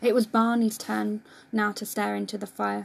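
ordinary delivery

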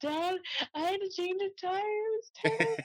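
tearful, very high-pitched voice. Retelling calls to their dad during races, imitating crying on the phone. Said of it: "I'd call my dad like crying".

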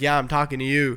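ordinary delivery

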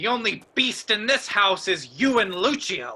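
heated, angry voice. In a drama, the injured man answering his wife's accusation, an angry retort. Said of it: "How dare you speak to me like that?".

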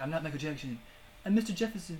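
high, cartoony character voice. Recounting a South Park episode and quoting the character, Mr. Jefferson impression. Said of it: "do they say it like you did?".

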